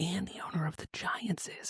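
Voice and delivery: hushed voice. Trading gossip about who is in the Epstein files, whispering. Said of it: "Why are you whispering?".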